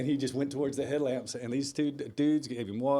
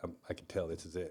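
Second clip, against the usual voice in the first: put-on tearful voice, lower and quieter; 8 semitones lower, 10 dB quieter than usual. Retelling a late-night phone call, imitating a friend crying. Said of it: "And he's crying".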